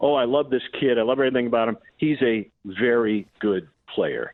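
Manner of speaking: usual speaking voice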